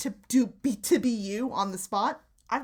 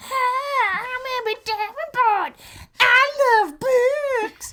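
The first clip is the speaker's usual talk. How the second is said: crude mocking sock puppet voice, much higher, louder, slower; 14 semitones higher, 9 dB louder than usual. Asked by Emmett to remind him of your version of him, do a crude, broad mocking Emmett Davenport voice. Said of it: "that's just a crude, broad character".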